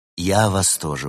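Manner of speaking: ordinary delivery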